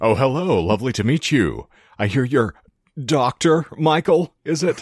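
high-pitched cartoon mayor character voice. Imagining the Adam West mayor of Quahog greeting someone: Adam West mayor impression. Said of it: "That's a very good impression".

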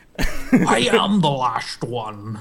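put-on Scottish-accented voice. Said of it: "That's from that dragon movie".

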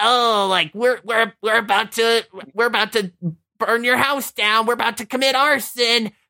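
grating, irritating, high-pitched weird gangster voice. Speaker imitates a man described as a weird gangster, high pitched annoying voice. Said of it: "like this high pitched annoying voice".

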